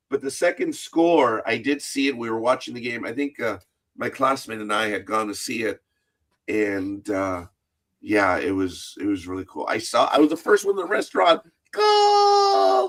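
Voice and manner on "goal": long, high-pitched scream. Retelling watching the game in a restaurant: reenacting a screamed goal call. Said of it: "You screaming goal like the guy on the T V does".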